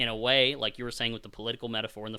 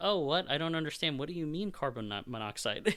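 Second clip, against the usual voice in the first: courteous, pleasant, pitched-up put-on politeness; 5 semitones higher, 4 dB quieter than usual. Quoting a movie character talking to Cooper: imitating a cordial character. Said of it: "she's being kind of cordial".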